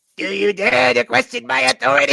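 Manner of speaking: very high, loud, gritty, rasping cartoon voice. Repeating the warlord's line after a player asks for it: Cartman voice. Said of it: "now I think he has to be Cartman".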